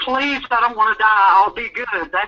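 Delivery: put-on desperate pleading tone. Retelling running from gunfire, begging god: retelling begging god. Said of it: "I was begging God".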